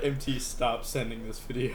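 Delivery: plain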